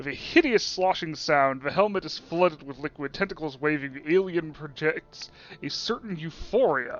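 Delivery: ordinary delivery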